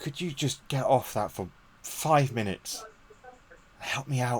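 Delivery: frazzled, stressed, worn-out, tired mother voice. Voicing a stressed mother asking her child for help: stressed, tired mother voice. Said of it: ""Stress the fuck out" is".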